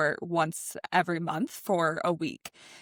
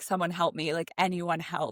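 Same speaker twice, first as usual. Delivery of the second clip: mock-panicked, put-on voice. Retelling the bride's inner cry as she panics, begging anyone to come and help her. Imitating a panicked plea. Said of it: "has a full scale panic attack".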